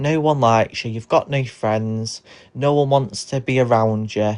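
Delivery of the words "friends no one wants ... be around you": ordinary talk, nothing marked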